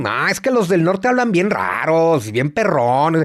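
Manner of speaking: put-on sing-song Mexico City accent. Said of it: "de este lado decimos".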